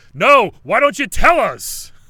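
put-on fed-up angry shout, very loud and very high. Retelling how a friend yelled at a guy asking the group a question, imitating Jack's angry yell. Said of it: "in the most frustrated, like, angry way".

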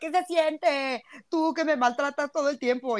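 mock laughing through words. Retelling what a woman says in a TikTok video: imitating someone laughing while talking. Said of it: "sale la morra caga de risa".

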